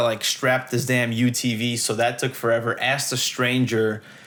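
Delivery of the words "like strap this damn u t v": usual speaking voice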